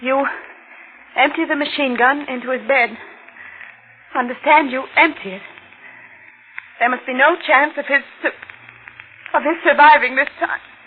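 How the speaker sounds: murderous scheming woman's voice. Reading written lines on request, like a woman bent on murder. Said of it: "read them like a woman bent on getting somebody murdered".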